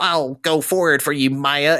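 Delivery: daft, goofy, cartoonish put-on voice. Quoting what the thing says when it protects you: goofy voice. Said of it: "it has like a goofy ass voice".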